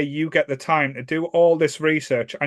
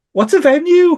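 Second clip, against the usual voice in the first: very high, squeaky, tiny little voice; 12 semitones higher, 8 dB louder than usual. Recalling a tour announcement, the speaker quotes what was heard from bed, little voice. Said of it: "all you heard was this little voice going".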